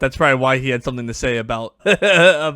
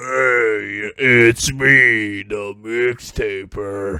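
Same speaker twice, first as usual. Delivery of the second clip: put-on deep voice, very slow and drawn out; 3 semitones lower than usual. Playing the mixtaper character introducing himself: put-on deep voice. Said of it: "talk in the deep voice".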